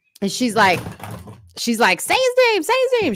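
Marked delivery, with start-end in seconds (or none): 2.0-3.2 mock very high-pitched woman's voice, yelling. Retelling what a woman shouted while they waited for a tow truck, imitating her yelling. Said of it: "She's like yelling at me".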